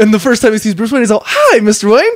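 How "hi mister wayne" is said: bright, eager, chipper, excited voice, pitched up. Describing a movie character meeting Bruce Wayne for the first time: mock-chipper excited greeting. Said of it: "he's all fucking like chipper and excited to see him".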